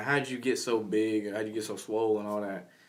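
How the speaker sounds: ordinary delivery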